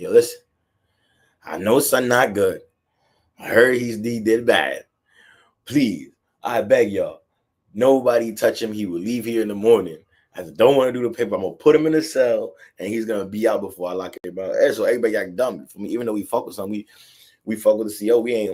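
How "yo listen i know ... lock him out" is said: ordinary delivery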